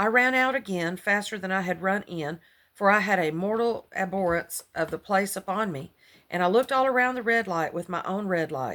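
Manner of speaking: usual speaking voice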